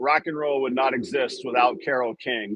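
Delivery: normal talking voice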